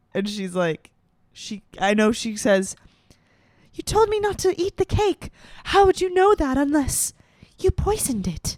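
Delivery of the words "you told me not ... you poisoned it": small, meek, high-pitched little voice. Imitating the villain's annoyingly meek daughter from The Island Princess. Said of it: "really annoyingly meek".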